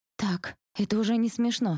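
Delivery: high, quavering, trembling, squeezed-out words. First-person narrator unable to move a pen in a simulation, trembling voice. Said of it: "Дрожащим голосом выдавливаю я".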